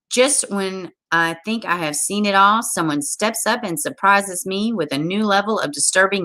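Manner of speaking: usual speaking voice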